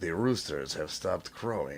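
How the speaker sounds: put-on Russian accent, low and hushed. Retelling what the man he phoned said in code, in a russian accent. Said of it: "long conversations in Russian accents".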